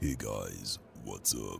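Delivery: very low, soft baritone. Retelling greeting some guys, the speaker uses a very deep baritone voice. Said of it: "said in my best baritone possible".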